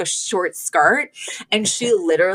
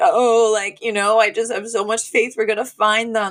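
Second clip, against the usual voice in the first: put-on, fake tearful voice; 2 semitones higher than usual. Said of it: "pretending to cry with the family".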